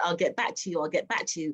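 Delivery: normal talking voice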